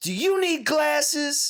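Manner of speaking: very high, loud, slow, drawn-out game-announcer taunting voice. Imitating the dance game announcer taunting a player who misses beats: imitating the DDR announcer taunting. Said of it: "He'd start saying shit like that".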